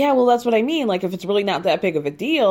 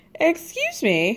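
ordinary delivery

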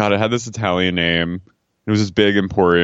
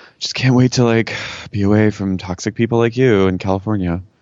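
mock muttering under the breath, as an aside. Retelling what a daughter said during an argument with her mom, imitating muttering under her breath. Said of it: "under her breath".

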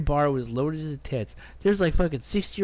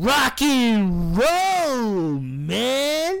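put-on mushy slurred speech, pitched up, drawn out; 8 semitones higher, 4 dB louder than usual. Retelling a guy playing air guitar at a show, imitating a guy slurring words. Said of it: "some guy there just slurring his words".

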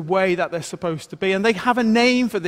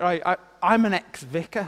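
ordinary delivery

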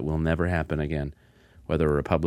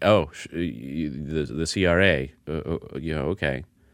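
stammering delivery, much slower. Retelling a phone call, the speaker acts out Meyer stammering.

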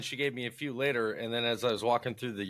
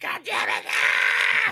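mock screaming, higher and louder; 8 dB louder than usual. Imitating the kid from the video screaming: imitating the kid's scream. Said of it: "it was the scream at the end for me".

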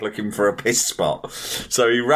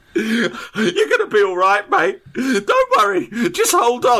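tearful, crying speech with a comforting, reassuring tone; 12 semitones higher, 3 dB louder than usual. Retelling how an injured man's friend hugged and reassured him, imitating a friend crying. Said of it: "his mate hugged him and started crying".

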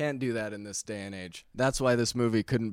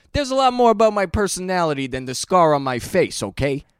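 loud, high put-on Italian voice, belted out; 9 semitones higher, 10 dB louder than usual. Redoing a movie character's line, this time in an italian voice. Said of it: "I can't do it without doing Italian voice".

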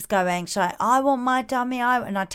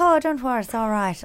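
put-on Irish accent, easy reassuring tone; 3 semitones higher than usual. Retelling what a man in a lift said: imitating an Irish accent. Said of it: "One of your better accents".

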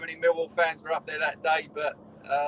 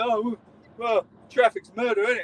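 pitched-up loud moan; 6 semitones higher, 5 dB louder than usual. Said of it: "still moaning now".

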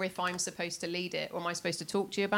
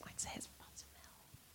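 soft, unvoiced whisper. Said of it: "She whispered".

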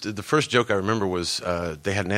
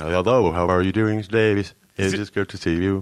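realistic speech-synthesizer voice; 4 dB louder than usual. A guest greets the hosts on arrival, doing a Stephen Hawking impression. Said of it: "Is it cool to do like Stephen Hawking".

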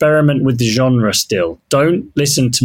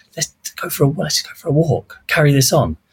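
imitated whispering; 3 semitones higher than usual. Retelling what a journalist said during a sit-down interview: imitating someone whispering. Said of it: "he's sort of whispering".

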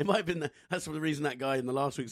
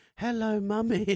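put-on high-pitched creepy little girl voice; 8 semitones higher, 6 dB louder than usual. Comparing someone to a horror movie child: horror-movie child voice. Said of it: "she's like a child from a horror movie".

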